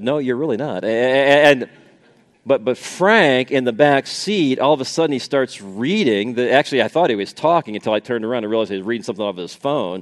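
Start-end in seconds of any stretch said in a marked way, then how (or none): 0.0-0.8 mock mutter under breath, quieter. Retelling a reply to the driver, said under breath: retelling a mutter under breath. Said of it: "under my breath".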